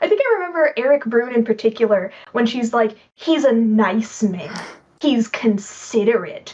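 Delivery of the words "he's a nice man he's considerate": very slow, hate-filled, loathing in every word. Imitating a character who praises a guest but sounds like she hates him: imitating someone saying it hatefully. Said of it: "she sounds like she hates this dude".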